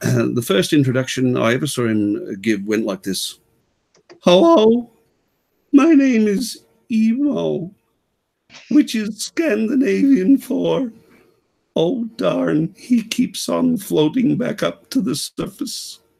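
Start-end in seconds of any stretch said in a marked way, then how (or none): 4.2-16.0 very high-pitched, slow, drawn-out comedian voice. Showing a listener how a comedian sounds: Emo Philips impression. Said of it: "I can give you an idea if you like".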